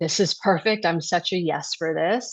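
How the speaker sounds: ordinary talk, nothing marked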